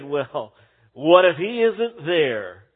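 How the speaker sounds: slow, mock smirking, scornful, sneering voice. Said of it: "sneeringly or smirkingly, the atheist said".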